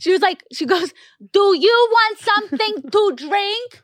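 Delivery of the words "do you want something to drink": loud, slow, deliberate, pitched-up delivery. A deaf speaker retells how a flight attendant addressed them, imitating loud speech. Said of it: "Like so loud".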